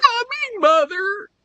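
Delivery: huge voice crack, very high pitch. Recalling a line from an old cartoon, imitating a massive voice crack. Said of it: "It was like a massive voice crack".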